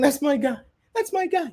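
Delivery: mock sobbing, tearful, weepy crying voice. Mocking the coach's reaction when a player left: imitating Tom Thibodeau crying. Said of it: "Tom Thibodeau was crying and saying".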